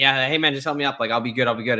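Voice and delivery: ordinary talk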